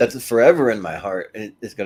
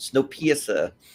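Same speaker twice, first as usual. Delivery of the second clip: fake put-on New Zealand accent; 5 semitones higher than usual. Saying Snowpiercer for fun in a put-on New Zealand accent. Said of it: "I don't know why that's fun to do in a New Zealand accent".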